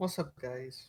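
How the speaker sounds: drowsy, sleepy, very soft and quiet voice. A guest just welcomed onto the show greets everyone, sleepy-sounding. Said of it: "You sound so sleepy".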